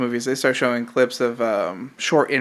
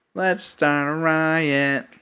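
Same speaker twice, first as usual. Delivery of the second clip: put-on nasal teenage drawl, "riot" stretched out; 3 semitones higher than usual. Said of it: "why are you saying it like that?".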